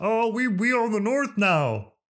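very high, horn-like, drawn-out football fan cry. Talking about the Vikings' fan base, the speaker does an impression of Vikings fans. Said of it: "That's my impression of Vikings fans".

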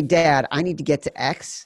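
ordinary delivery

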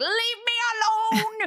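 mock very high-pitched screaming outburst, me drawn out. Recapping a TV scene, the speaker acts out a man screaming at an old man; imitating someone screaming. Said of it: "he's screaming at him".

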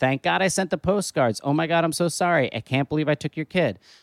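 ordinary talk, nothing marked

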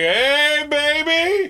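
very high, creepy hollered voice. Retelling how a man hollered at a woman: imitating a creepy catcall. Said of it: "he hollers at her".

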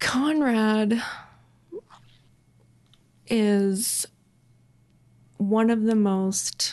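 very slow speech, near tears, holding them back. Starting to talk about conrad's gifts, holding back tears. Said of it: "I don't wanna cry".

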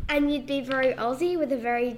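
plain

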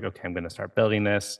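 normal talking voice

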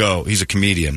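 ordinary talk, nothing marked

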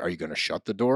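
play-acted patronizing, superior, condescending tone. Retelling what Silas said to Jasmine: imitating Silas, condescending. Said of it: "in the most condescending way".

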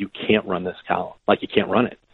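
ordinary talk

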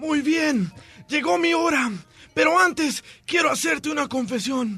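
raspy, hoarse, weak, feeble dying voice. In a joke, a dying husband calls his wife to confess, in a hoarse, weak voice. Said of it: "con voz ronca y débil".

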